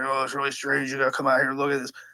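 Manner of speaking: deep, hurried, rushed voice. Retelling a man who called him out to look at something: imitating his deep voice. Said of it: "He has this deep voice".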